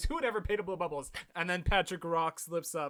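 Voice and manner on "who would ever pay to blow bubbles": mild, mock scornful, sarcastic holler. Retelling a cartoon scene, a character shouts out the window: imitating Squidward yelling. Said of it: "He yells that".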